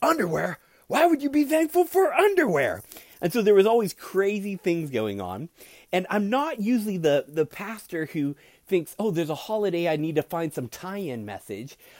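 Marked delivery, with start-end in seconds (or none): 0.0-2.8 put-on very high yelled holler. The pastor retells the deaf grandfather at a holiday: retelling grandfather yelling out. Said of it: "He yelled out".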